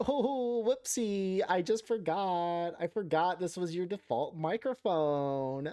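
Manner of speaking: slow, drawn-out, put-on Valley Girl accent. Explaining a microphone mix-up, the speaker voices their computer in a valley girl voice. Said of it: "my computer turned into a Valley Girl".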